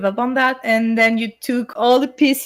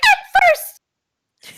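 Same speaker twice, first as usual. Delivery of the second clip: very high, uncontrolled, pitchy screaming yell; 4 dB louder than usual. Retelling own past scream from an old video: imitating own past high-pitched scream. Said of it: "back then when I was screaming".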